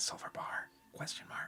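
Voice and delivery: hushed, soft, close whisper. Voicing a woman whispering in the listener's ear, whispering. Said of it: "she's whispering in your ear".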